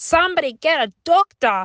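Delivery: put-on fading Yorkshire accent. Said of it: "his Yorkshire accent just totally went out the window".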